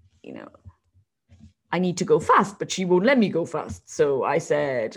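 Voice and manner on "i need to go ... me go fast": put-on horse voice. Voicing the horse Manny during a jump: voicing a horse. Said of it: "he would say".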